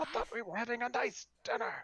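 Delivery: very high, aggrieved, wounded, put-out tone. Voicing Splinter upset that dinner was ruined: Splinter voice. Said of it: "Splinter's back here going".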